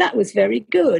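put-on surprised delivery. Retelling what the bloke sitting next to him said, imitating a surprised tone. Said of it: "with sort of a kind of surprise in his voice".

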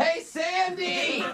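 high, loud yell, name drawn out. Calling to a coworker across the office during a phone call: yelling across the office. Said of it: "Can you stop yelling at each other?".

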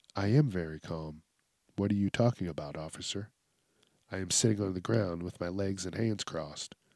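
very quiet, hushed, insistently calm voice. Acting out a man answering the officer: imitating a man who insists he is calm. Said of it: "And the guy's like".

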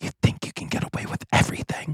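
soft, hushed whisper under the breath. Retelling what the kid sitting next to them said: imitating a whisper. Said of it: "whispers to me".

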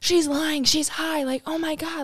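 put-on, high, frantic, accusing freak-out. Retelling being accused by mom of being high: imitating mom freaking out. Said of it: "freaking out at me".

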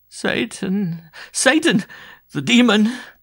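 very high, very slow, loud, drawn-out shuddering moan. A woman hides her face in her hands as a priest approaches; moaning, shuddering. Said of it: "shuddering as she moaned".

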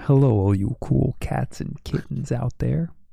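very drawn-out, gravelly, husky, sultry DJ voice. Showing another speaker how to say the greeting: sexy greeting voice. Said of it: "You gotta get really sexy with the hello".

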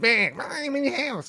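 very high, slow, drawn-out bug voice. Chatting with friends, the speaker imitates the bugs' voice: cartoon bug voice. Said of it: "the guys who do that voice".

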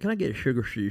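put-on S sound whistled through the teeth. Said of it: "and I whistled through my teeth".

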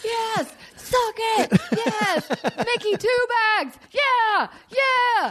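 very high, very slow, drawn-out screaming. Retelling a partner's reaction while watching a game: imitating someone screaming loudly. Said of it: "he screamed so loud".

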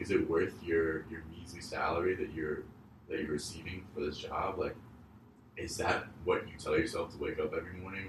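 usual speaking voice

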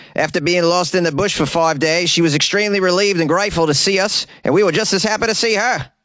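ridiculous, exaggerated put-on Australian accent. Reading another quote from the man in the story, the speaker uses a ridiculous Australian accent. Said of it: "This is the most ridiculous Australian accent ever".

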